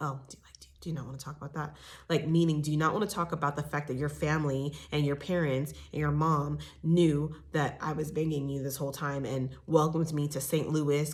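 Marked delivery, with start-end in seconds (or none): 0.0-1.8 quick hushed whisper, tripping over words. Retelling a question she asked him, the speaker imitates her whispering. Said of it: "she kind of whispers".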